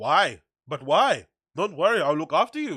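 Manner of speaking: put-on German-accented speech. Retelling what a friend said before a gig: imitating Gerd with German accent. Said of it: "that's a very German way of response".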